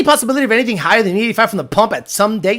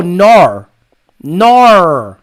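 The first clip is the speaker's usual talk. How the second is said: no turned into Australian "nar", drawn out; 4 semitones lower, 6 dB louder than usual. Showing how women from Australia say the word no: Australian accent. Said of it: "They go".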